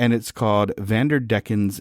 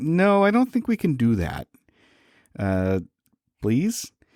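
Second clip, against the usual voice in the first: put-on bashful, hedging, coy, pitched-up voice; 5 semitones higher than usual. Retelling a ship's crew answering a request, acting coy. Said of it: "trying its best to be a little coy".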